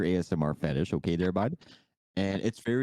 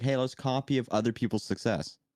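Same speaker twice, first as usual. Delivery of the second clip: normal talking voice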